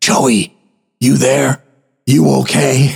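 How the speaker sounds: discreet, restrained, quietly called voice. Calling down into the basement during a party upstairs to check on joey: hushed voice. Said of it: "call down in a hushed voice".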